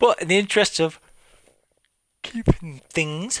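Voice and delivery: yawning while talking. Narrating a game playthrough, yawning while talking. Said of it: "excuse me, yawning".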